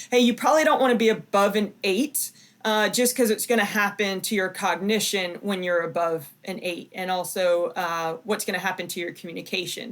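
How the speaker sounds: ordinary talk, nothing marked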